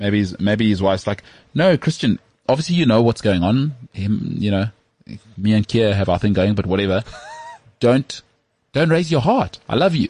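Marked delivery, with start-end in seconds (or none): 1.5-10.1 put-on Danish accent. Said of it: "She's doing it in a Danish accent".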